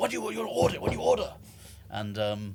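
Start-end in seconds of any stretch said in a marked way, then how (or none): 0.0-1.3 short, curt, rude, snappish bark. Describing rude restaurant staff taking orders, imitating them barking. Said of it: "they like bark like".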